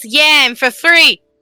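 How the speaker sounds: loud shouted, yelled reply. Yelling back at a character who scolded her: yelling back in Sammy's voice. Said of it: "yell back at her in Sammy's voice".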